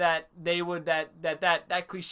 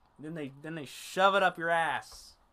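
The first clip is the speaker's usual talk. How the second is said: ordinary delivery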